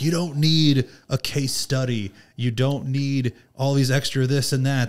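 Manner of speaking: put-on scream. The speaker retells a man screaming at a room of well-educated people, mock-screaming. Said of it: "He's screaming".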